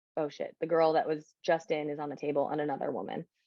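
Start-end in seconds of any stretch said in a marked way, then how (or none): none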